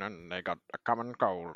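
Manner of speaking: deep, low-pitched film narrator voice-over. Retelling a film ending as its narrator: Morgan Freeman narrator impression. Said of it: "That's a really good impression".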